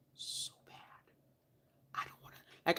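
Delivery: unvoiced whispering. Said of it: "Can you hear me whispering?".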